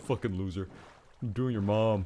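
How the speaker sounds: exaggerated, thick New York accent. Discussing how to voice Sans; exaggerated New Yorker accent. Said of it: "the more New Yorker accent".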